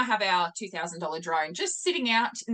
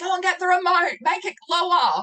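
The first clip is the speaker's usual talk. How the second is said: urgent yell, very high and loud; 11 semitones higher, 6 dB louder than usual. Retelling how he yelled at the speaker while treading water under the drone: retelling his yelling. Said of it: "yelling at me".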